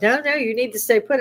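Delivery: shouting. Retelling how the bartender urged staying put: imitating people yelling. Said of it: "the bartender and stuff were yelling".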